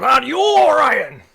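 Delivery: put-on elderly turtle voice, high and loud. Voicing an aged turtle calling from a room: aged turtle character voice. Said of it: "he looks a bit aged".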